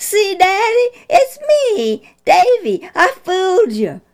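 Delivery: put-on very high, slow, delighted laughing boy voice. A boy takes off his tiger costume head and speaks to his father: laughing, delighted. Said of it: "a laughing boy, delighted with his antics".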